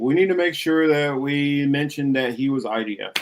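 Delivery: ordinary delivery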